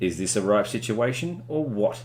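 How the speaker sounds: ordinary delivery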